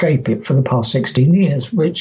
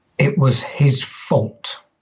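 mock chilling, icy, very cold tone; 3 dB quieter than usual. Retelling what a grieving woman suddenly said, imitating a very cold voice. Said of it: "she said in a very, very cold voice".

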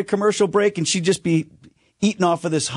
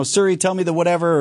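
plain

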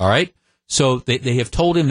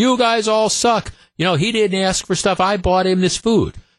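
frantic, pitched-up, going-nuts screaming rant; 7 semitones higher than usual. Retelling a customer's outburst at restaurant workers: imitating someone screaming. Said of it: "starts screaming".

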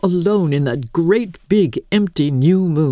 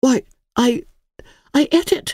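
slow, high-pitched, halting, stumbling stammer; 7 semitones higher than usual. A child answers a man's startled question: stammered. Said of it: "stammered Emily".

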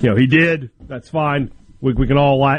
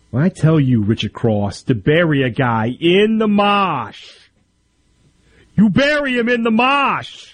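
thick, exaggerated Boston accent, marsh said drawn-out mosh; 4 semitones higher than usual. Joking about a coach who says Boston has no accents: mock Boston accent. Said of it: "Not an accent".

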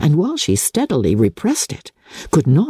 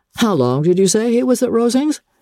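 casual, indifferent, lightly pitched up; 9 semitones higher than usual. He asks her a follow-up question with an air of indifference. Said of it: "With an air of indifference".

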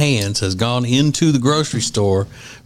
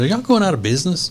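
put-on frustrated, quick, high passive-aggressive tone; 5 semitones higher than usual. Retelling what they always say, in a mock passive-aggressive tone. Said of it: "Passive aggressive tone is always".

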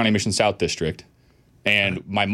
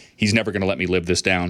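mock under-breath grumble, much lower; 3 semitones lower than usual. Retelling the moment the listener made that shot, retelling a mutter under breath. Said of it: "under my breath".

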